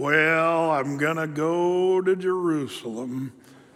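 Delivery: dragging, mopey country drawl. Describing a nerdy friend, showing how he talked, imitating friend's Eeyore-like talk. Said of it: "And he'd talk like this".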